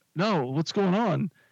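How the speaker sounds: high, slow, innocent, playing-dumb voice. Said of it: "I just play dumb".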